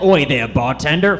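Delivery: speaking horse voice. Telling a joke about a horse walking into a bar, the speaker does a horse voice. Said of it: "pretty good horse".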